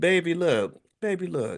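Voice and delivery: put-on sweet baby voice, high-pitched and slow. Imagining how she would say her Instagram statement, use Tabitha Brown's sweet baby voice. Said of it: "I could imagine her saying in her sweet baby voice".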